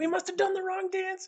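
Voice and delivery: very high, slow, stretched-out cartoon voice.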